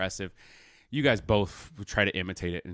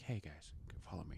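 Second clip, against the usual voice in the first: very quiet, hushed, secretive conspiratorial tone; 3 semitones lower, 19 dB quieter than usual. Game master voicing a character who beckons the party along, conspiratorial. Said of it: "like conspiratorially".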